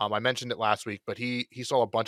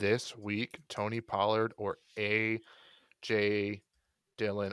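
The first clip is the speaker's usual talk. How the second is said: very slow, halting, broken up mid-phrase; 4 dB quieter than usual. Asked to choose between two players this week, repeating the question very slowly to stall. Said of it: "I am talking very slow to stall".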